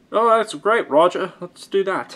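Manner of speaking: high-pitched, voice-acted put-on British accent. Acting out the band's reply to roger: put-on british voice. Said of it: "British voice acting".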